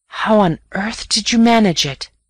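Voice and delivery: whispering. After walking in silence at midnight, the narrator finally whispers to Raffles. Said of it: "At last I whispered".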